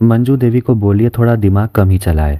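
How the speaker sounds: plain reading voice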